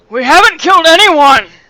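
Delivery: very loud, high, slow, drawn-out yell projected upward. Voicing a character yelling up from below a cliff. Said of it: "Thomas is like".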